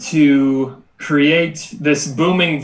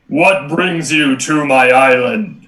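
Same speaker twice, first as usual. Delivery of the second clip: big, grand, imposing, commanding delivery. Voicing the robot man who walks up the beach, in a booming voice. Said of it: "this booming voice is going to say".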